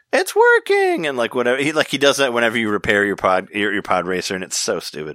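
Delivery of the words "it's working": very high, corny delivery. Quoting a terrible line from the pod racing game: imitating Anakin's line. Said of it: "where he's like".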